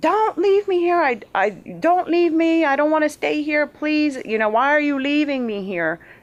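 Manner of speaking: mock crying, begging scream, very high and tearful. Retelling pleading aloud with something leaving her: retelling crying and screaming. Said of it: "and I'm crying and screaming".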